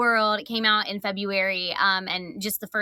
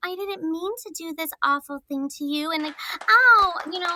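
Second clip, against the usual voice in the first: younger voice with feigned, put-on innocence; 8 semitones higher than usual. Describing their main character voices, the speaker demonstrates one: Lila's feigned innocent voice. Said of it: "a little younger and she's always kind of feigning like".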